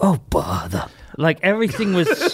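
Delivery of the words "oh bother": raspy cartoon bear voice, much lower. Arguing Pooh was always raspy, doing a raspy Pooh voice. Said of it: "Pooh was always raspy".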